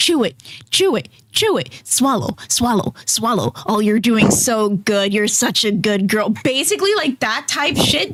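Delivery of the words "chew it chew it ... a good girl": put-on coaxing voice. Acting out what Ken might say on the show: imitating Ken, coaxing. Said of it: "Imagine Ken going".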